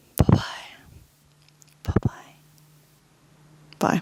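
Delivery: hushed whisper. Saying goodbye at the end before signing off, whispering. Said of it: "I'm whispering now".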